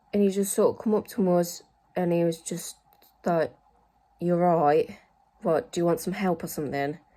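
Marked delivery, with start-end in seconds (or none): 4.1-6.9 mock-rude, judgmental man's tone. Retelling how a man came up to them, imitating his rude tone. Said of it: "It was just very rude about it".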